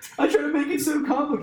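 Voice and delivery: very high voice, climbing and jumping up. Speaker talking about stress at their job, voice going high. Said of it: "my voice got high".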